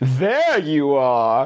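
mock British secret agent voice. Showing another person how to do the movie line better, as Austin Powers. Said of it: "you can do that better".

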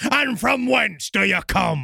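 high, slow, far-off pirate shout. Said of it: "Blackbeard began by yelling".

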